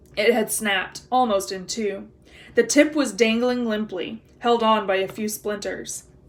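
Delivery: ordinary delivery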